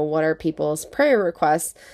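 ordinary talk

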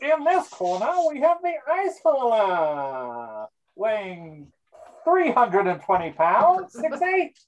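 put-on carnival barker, fight announcer voice. Announcing the fighters heard from the basement, in a carnival barker voice. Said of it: "It was the Barker's voice".

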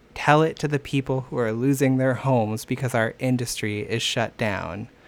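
ordinary talk

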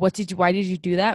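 normal talking voice

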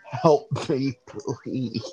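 frantic, panicked, desperate pleading tone. Narrating a scene, voicing a figure being dragged off, panicked pleading. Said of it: "Arceus is panicking".

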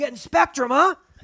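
acted shout. Retelling driving up to a compound: retelling own yell. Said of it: "I yelled out".

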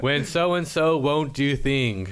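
robotic, machine-like text-to-speech voice. Describing a common TikTok trend to others, saying a caption in the TikTok robot voice. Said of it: "like the robot voice on TikTok".

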